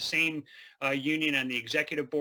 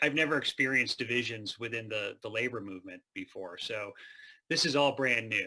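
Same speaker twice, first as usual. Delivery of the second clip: dry, wry sarcastic delivery, played straight; 3 semitones lower than usual. Joking to a panel about divisions in the labor movement: dry sarcastic delivery. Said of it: "apologies for my dry delivery".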